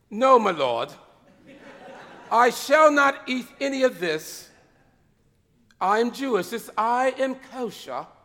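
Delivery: stately, posh aristocratic English period-drama voice. The speaker imagines what Peter said to himself, in a Downton Abbey voice. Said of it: "maybe in a Downton Abbey kind of voice".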